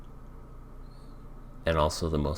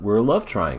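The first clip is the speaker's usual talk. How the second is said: plain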